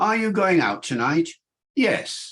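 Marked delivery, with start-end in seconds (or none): 1.7-2.3 "yes" said with a falling pitch. Answering 'are you going out tonight' in british english: falling tone on 'yes'. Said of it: "With a falling tone".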